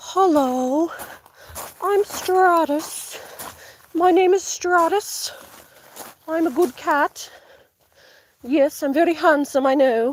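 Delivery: proper, dignified, faintly British, drawn-out voice. Speaker shows the voice they do for Stratus: Stratus voice, slightly British. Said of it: "He's British for some reason. Just a little bit".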